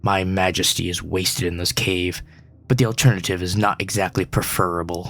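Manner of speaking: low, grumbling, huffing creature voice. A narrator voices the creature in the cave grumbling back, huffing, grumbling creature voice. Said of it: "Huffing, the creature grumbles back".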